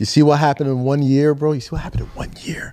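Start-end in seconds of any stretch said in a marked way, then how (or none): 1.5-2.7 said in a whisper. Talking about the Knicks with friends, whispering. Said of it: "Why are you whispering?".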